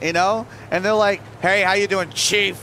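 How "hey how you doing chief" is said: mock passive-aggressive tone, slower. Retelling what a McDonald's employee said back to him, mock passive-aggressive greeting. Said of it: "he said it like really passive aggressive".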